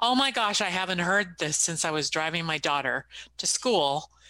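ordinary talk, nothing marked

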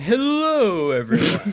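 very high voice with swooping pitch. Greeting everyone after offering an impression: Matt Berry impression. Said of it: "my best, uh, Matt Berry impression".

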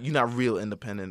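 ordinary talk, nothing marked

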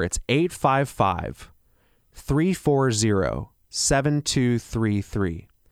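slow, spaced-out, deliberate delivery. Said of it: "I'll say that a little slower".

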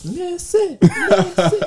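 put-on very high, piercing, drawn-out little kid yell. Telling how the coach's kid heckles in the gym, go into imitating Theo's piercing little kid yell. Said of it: "and it's a little kid voice".

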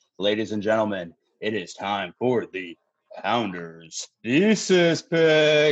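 radio announcer voice, "pick" drawn out. A podcast host opens the show's pick segment in his radio voice. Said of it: "my radio voice".

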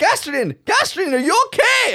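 very high, swooping, drawn-out yell. Player's character getting up beside him on the deck, yelling in his face. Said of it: "I'm just start yelling in his face".

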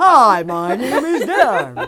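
slow, loud mock ad announcer voice.

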